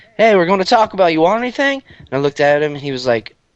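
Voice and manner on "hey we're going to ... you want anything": high, hollered, called-out yell. Retelling what the guy's friends called out the car window: retelling a yell. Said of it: "they yelled out the window".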